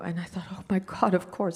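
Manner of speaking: tearful, crying voice, speaking through tears. Recalling a phone call about needing moments on set: crying. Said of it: "I'm crying now, as you can tell".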